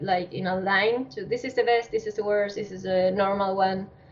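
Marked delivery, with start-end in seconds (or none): none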